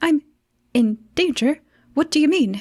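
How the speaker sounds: short, broken-up bursts. Storyteller voicing a character just told his life is in danger, staccato voice. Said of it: "he has a staccato voice".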